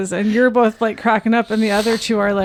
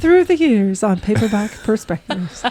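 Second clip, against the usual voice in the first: put-on public radio announcer voice. Joking about sending a mixtape for listener donations: NPR voice. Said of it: "That was my N P R voice".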